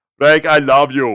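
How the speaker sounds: put-on booming deep voice. Repeating a line for the other speaker: Arnold impression. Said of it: "Okay, Arnold, thank you so much".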